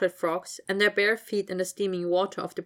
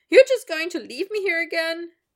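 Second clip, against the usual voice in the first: very high, loud, squeaky little voice; 10 semitones higher, 6 dB louder than usual. Reading a character's line as he calls after her when she walks past, high squeaky voice. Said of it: "His voice was high and squeaky for his size".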